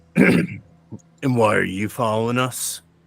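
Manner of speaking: harsh, very gruff, rough voice. Narrating a woodland scene to the listener, voicing an unseen stranger: very gruff voice. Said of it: "a very gruff voice that just says".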